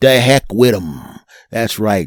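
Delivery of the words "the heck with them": Northeastern American accent. Podcast host tells listeners how to say the phrase, in a Northeastern US accent. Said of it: "Say it with the Northeast of the United States of America accent".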